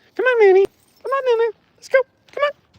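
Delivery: very high, squeaky, fast chatter. Speaker calling two animals to come along, high squeaky fast voice. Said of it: "it's always high squeaky fast".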